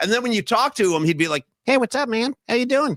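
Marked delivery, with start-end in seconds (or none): 1.7-3.0 tiny, small, pitched-up high little voice. Imitating a big football player whose voice did not match his physique: imitating J J Stokes's little voice. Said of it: "that little voice and everything".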